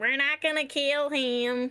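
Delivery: very loud, high shout. In a role-play scene, a character shouting over her shoulder. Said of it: "she looks over her shoulder and shouts".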